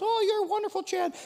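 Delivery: very high, small, squeaky little voice. Speaker voices a god he has built and decorated himself, in a little voice. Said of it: "little voice".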